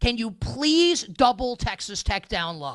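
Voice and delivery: mock mild, half-shouted outburst. Speaker telling a co-host about watching Saturday's game: retelling screaming at the TV. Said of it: "I'm screaming at the television".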